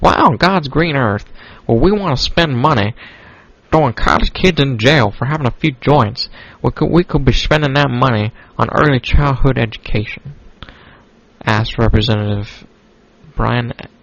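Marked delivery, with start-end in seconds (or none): 0.0-10.4 horrible, unpolished, put-on country accent. Reading out a politician's quote: bad country accent. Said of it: "let me don a voice here".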